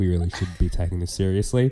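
put-on grave, low, dead-serious, completely straight delivery. Retelling what another speaker just said: imitating a very serious tone. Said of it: "said that with the most serious".

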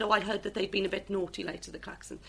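ordinary talk, nothing marked

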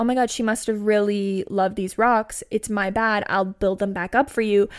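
usual speaking voice

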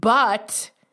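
the word but hit hard, heavily stressed. Turning an argument with heavy stress on 'but'. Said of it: "I'm putting the emphasis on the but".

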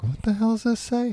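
very high, half-swallowed mutter under the breath. Imitating the guy reading the audiobook: imitating muttering under breath. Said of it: "under his breath".

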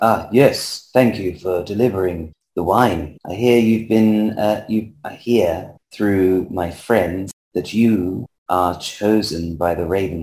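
soft, very quiet, hushed under-the-breath delivery. Voicing a character who thanks someone for delivering wine: speaking very quietly. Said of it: "he says very quietly".

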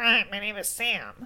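put-on nasal character voice. Asked how Sam talks in the audiobook, do a nasal Sam voice. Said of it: "I do have to put my hand on my nose".

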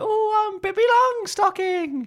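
very high, squeaky cartoon voice. Trying to recall a film quote, speaker says it in a Shrek-like cartoon voice. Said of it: "That sounds like a Shrek voice".

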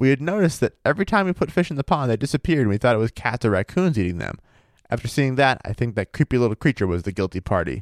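ordinary talk, nothing marked

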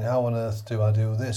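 ordinary delivery

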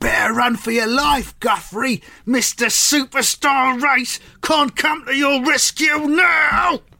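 full-intensity, high, intense yelled shout. Narrator reads a player with the ball at his feet threatening a rival: shouting. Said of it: "And he just shouts".

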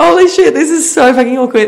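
panicky, blurted high and loud.

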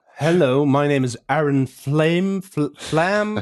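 put-on American accent.

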